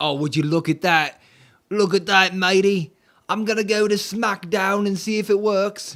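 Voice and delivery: loose, loud, high put-on Australian accent, slipping. Speaker browsing to SmackDown on their page, in Australian accent. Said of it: "I don't even think I'm doing an Australian accent anymore".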